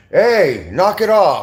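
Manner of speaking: acted very slow, drawn-out call. Retelling how the tower guard called out during a fight, imitating the tower guard. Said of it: "the tower was like".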